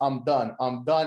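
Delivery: slow, tearful, broken-down crying voice. Retelling a wrestler refusing and quitting, imitating someone crying.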